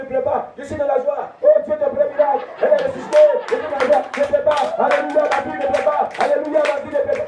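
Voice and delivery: ecstatic, high, loud, joyful exclamations.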